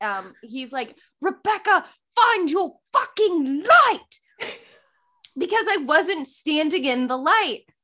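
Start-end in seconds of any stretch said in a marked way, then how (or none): 1.2-4.5 higher-pitched yell, called out from a distance. Retelling a call from the back during tech: imitating Robert yelling. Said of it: "Robert yells from the back".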